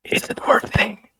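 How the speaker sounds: soft, breathy whispered aside. Leaning toward a character to explain a bow: whispering. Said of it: "kinda try to whisper".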